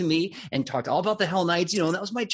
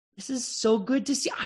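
high, cheerful, delighted tone; 6 semitones higher than usual. Voicing a glaive-wielding knight greeting the party: happy, cheerful voice. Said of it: "are all Hell Knights ... just happier?".

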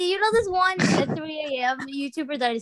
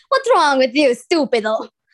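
put-on Italian accent, louder; 9 dB louder than usual. Speaker shows the others they can say the line in an Italian accent. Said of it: "I can say it in an Italian accent".

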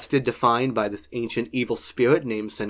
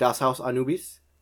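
German-accented speech; 3 dB quieter than usual. Speaker naming the german version of a show, in a german accent. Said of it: "Probably saying it more in a German accent".

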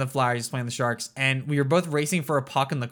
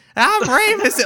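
very high, loud, squeaky voice-changer sound; 9 dB louder than usual. Showing how a voice-changing microphone sounded: voice-changer Rey Mysterio voice. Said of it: "you would sound like this".

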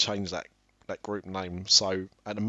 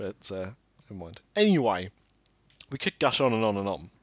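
ordinary talk, nothing marked

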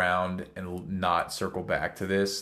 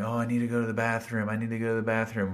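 put-on urgent whisper; 2 semitones higher than usual. Retelling how Casey whispered during a movie: imitating Casey whispering.

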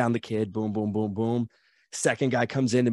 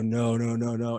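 mock terrified pleading tone, much slower. Alone in the ring with no one to tag, the speaker retells scared begging. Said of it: "I'm like shaking in my boots. I drop to my knees. I put my hands up".

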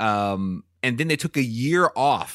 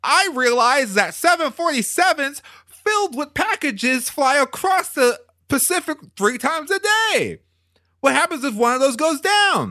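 spot-on famous-actor voice, pitched very high; 3 dB louder than usual. Quoting an interview about an idea for a film: Tom Hanks impression. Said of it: "he said in a flawless Tom Hanks impression".

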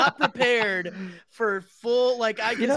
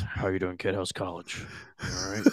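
put-on mild voice, lower and quieter; 11 dB quieter than usual. Describing someone as the opposite of a loud uncle: imitating a quiet uncle. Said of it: "he's like the uncle who goes".

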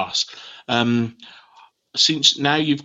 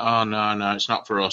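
plain

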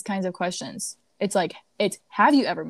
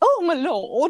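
outlandish, loud, high, put-on posh upper-class accent; 8 semitones higher, 5 dB louder than usual. Describing how they would play an outlandish character, put-on accent. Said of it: "I'd probably put on like an accent".

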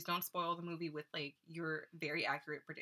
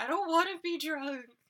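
very high, raised, desperate pleading tone; 10 semitones higher, 7 dB louder than usual. Echoing the other speaker's line back: mock pleading.

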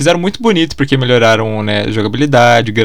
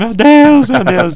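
very high, weeping, sobbing scream; 11 semitones higher, 4 dB louder than usual. Retelling how the community reacted to a game announcement, imitating people crying and screaming. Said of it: "a gente chorando, assim, gritando".

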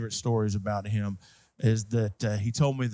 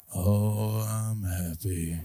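gloomy donkey voice with no joy at all. Describing how Eeyore talks even when his words are happy, in an Eeyore voice. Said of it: "everything he says sounds like this".

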